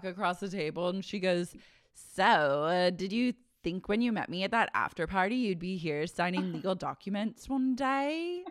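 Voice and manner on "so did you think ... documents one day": sudden switch to put-on British accent. Retelling what Sheena said at the prenup signing: imitating Sheena's British accent. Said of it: "accent completely changed into, like, a British accent".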